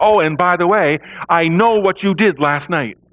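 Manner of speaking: put-on loud voice. Acting out the person across from you suddenly speaking up, in a loud voice. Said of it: "the person in a loud voice says".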